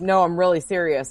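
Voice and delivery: ordinary talk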